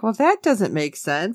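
ordinary delivery

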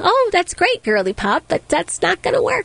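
acted out, mild, passive, unbothered, high. Retelling what a kid said, imitating her: passive, soft way. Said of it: "She says it in like a very passive, soft way".

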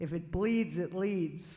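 put-on very loud Boston accent. Quoting old copy-desk guys from early night-shift reporting days, in a Boston accent. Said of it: "in their Boston accent".

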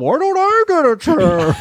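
ridiculous voice, very high, slow, swooping and sing-song. Retelling a cartoon scene where Bane gets picked on: ridiculous Bane voice. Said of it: "he still has that ridiculous voice".

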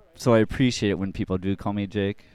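ordinary delivery

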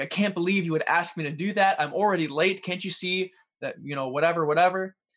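mock annoyed, angry, irritated ranting tone. Illustrating a husband late for work snapping at his wife, imitating an angry husband. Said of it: "He's angry with her".

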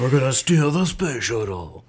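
very slow speech, drawn out word by word. Pitching a movie idea to its producers: Nicolas Cage voice. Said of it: "That's my Nick Cage voice".

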